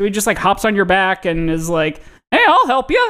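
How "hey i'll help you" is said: very high-pitched cartoon-style voice. Describing a helpful puppy-like character, in the dinosaur DNA voice. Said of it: "That was the voice that you just did, was the dinosaur DNA".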